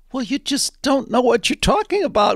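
polite, composed delivery.

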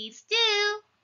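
sugary, honeyed tone. The pig answers the wolf who threatens to come down the chimney; sweetly. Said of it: "said the pig sweetly".

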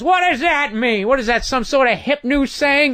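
enraged, high, screaming rant. Speaker acting out a man who kept yelling at him, retelling a man screaming. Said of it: "he just starts screaming at me".

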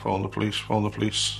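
ordinary talk, nothing marked

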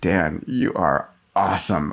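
low, sultry, seductive put-on voice. Showing the sexy setting of a device that wakes Dan up: sexy wake-up voice. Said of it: "you can set it at sexy and say".

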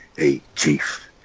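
low, gravelly admiral-style voice. Asked for the impression, voicing the admiral greeting the chief: gravelly Edward James Olmos impression. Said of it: "Can we get a little taste of that, of that impression?".

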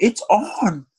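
group shout.

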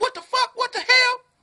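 high-pitched screaming. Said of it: "'Cause I'm over here screaming".

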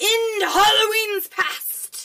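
dramatic, booming, high, slow and loud.

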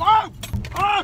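high, loud, frightened yelps.

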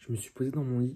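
whispering. Late at night in bed, not wanting to disturb the family, whispering. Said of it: "je chuchote".

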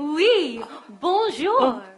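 worst, terrible put-on French accent. In a scene, a character greets Marie Catherine in the worst French accent ever. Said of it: "is that the worst French accent ever".

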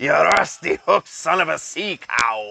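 deliberate put-on Scottish accent, loud and high. Throwing playful insults at someone during a bit: put-on Scottish accent. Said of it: "we're just doing it in the Scottish accent".

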